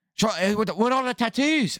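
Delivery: put-on Irish accent, high pitched and slow. Retelling a wife's reply to her husband, though she's not even Irish, in a mock Irish accent. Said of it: "She's not even fucking Irish".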